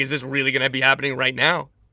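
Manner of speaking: normal talking voice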